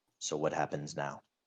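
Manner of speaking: hushed, grave, dead-serious tone. Describing a scene, acting out a character's question in a very serious tone. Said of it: "Just in a s- very serious tone".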